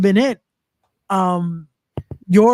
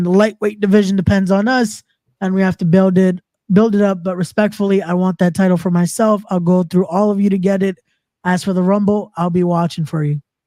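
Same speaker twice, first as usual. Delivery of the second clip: ordinary delivery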